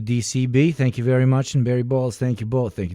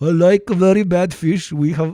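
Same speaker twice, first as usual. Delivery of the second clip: loud, high-pitched, failed attempt at Swedish accent; 6 semitones higher, 6 dB louder than usual. Prompted to do Swedish for the bit, the speaker tries a bad Swedish accent. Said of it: "I can't do Swedish".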